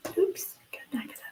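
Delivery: soft, quick whisper.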